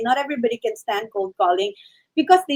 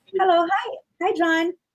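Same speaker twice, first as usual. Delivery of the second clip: friendly, bright voice pitched noticeably higher; 6 semitones higher than usual. Demonstrating the opening spiel of a phone call, delivered very friendly. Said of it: "I just make sure that I deliver it very friendly".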